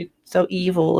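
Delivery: ordinary delivery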